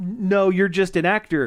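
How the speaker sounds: ordinary delivery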